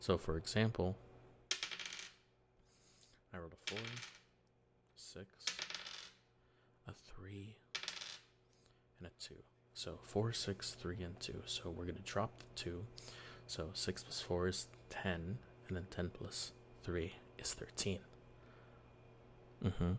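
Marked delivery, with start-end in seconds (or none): 3.3-18.0 very soft, near-whispered, hushed delivery. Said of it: "trying to be a little bit quiet".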